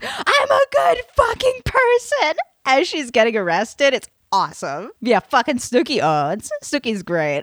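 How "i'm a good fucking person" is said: shrill, very high, slow, drawn-out scream. Retelling a woman being arrested on the beach: retelling a scream. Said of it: "she looks up and she screams".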